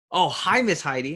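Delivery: thrilled, cheery tone. Showing voice inflection in a greeting, happy and excited. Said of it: "And you see, it's the excitement".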